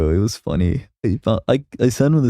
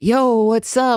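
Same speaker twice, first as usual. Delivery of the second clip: put-on very high, corny anime boy voice; 13 semitones higher than usual. Explaining the two types of e-boy voices, demonstrating the anime boy voice. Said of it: "the anime boy".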